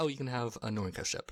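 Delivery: ordinary talk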